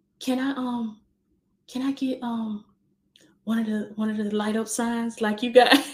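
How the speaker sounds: mimicked soft-spoken voice. Mom retelling her daughter's request, imitating her soft voice. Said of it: "She talked so soft".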